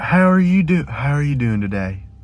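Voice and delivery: put-on Southern US accent. Speaker pretending to be a southerner for a demonstration: put-on southern accent. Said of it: "the Southerner is".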